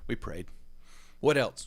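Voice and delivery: put-on South African accent. Retelling what a man said when questioned, in a put-on South African accent. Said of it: "he had this like South African accent".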